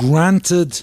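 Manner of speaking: heavy stress placed on the word "granted". Answering a listener's questions, putting stress on the word granted. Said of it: "Why do you stress the word granted?".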